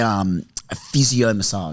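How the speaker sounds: slow delivery, heavy stress on physio.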